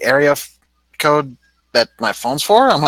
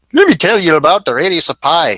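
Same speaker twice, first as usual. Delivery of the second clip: Canadian accent suddenly slipping in; 2 semitones higher, 3 dB louder than usual. Joking about reading a textbook to callers, the speaker slips into a Canadian accent. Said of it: "I suddenly went uh, Great North there".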